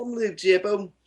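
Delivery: bad put-on Australian accent. Imitating the show's host by saying his name: bad Australian accent as Luke Tipple. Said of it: "My Australian accent keeps going to an English accent".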